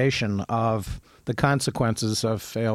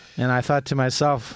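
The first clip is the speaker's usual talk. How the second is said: ordinary talk, nothing marked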